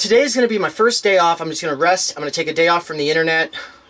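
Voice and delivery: ordinary talk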